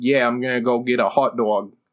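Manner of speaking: imitated Brooklyn accent. Describing a man who speaks fluent English, imitating his Brooklyn accent. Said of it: "he's got like a Brooklyn accent".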